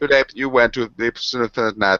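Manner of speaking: high, slow, text-to-speech robot reading voice. Joking about an iPad reading a story aloud, iPad robot reading voice. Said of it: "it has reached that robot voice".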